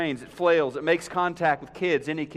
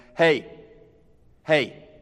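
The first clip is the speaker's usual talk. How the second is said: loud fatherly dad voice; 5 dB louder than usual. Describing escalating warning levels, the speaker demonstrates the call in a loud dad voice. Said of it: "in that loud dad voice".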